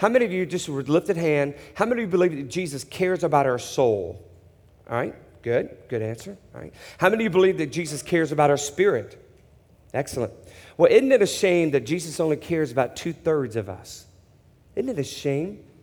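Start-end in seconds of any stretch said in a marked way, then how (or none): none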